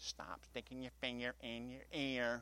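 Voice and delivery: mockingly mimicked words. Demonstrating a scorner, the speaker repeats a TV line, mocking his words. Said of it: "I'm mocking what he said".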